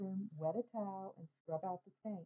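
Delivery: ordinary delivery, nothing marked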